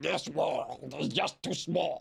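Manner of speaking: bad put-on hero voice, rough, creaky, awful. Reading a game quote aloud: awful impression of a game character. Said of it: "That was an awful impression".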